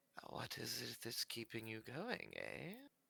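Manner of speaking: very quiet whisper, half under the breath. A player character squishing something down speaks to it, whispering under breath. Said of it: "whisper to it a little bit under my breath".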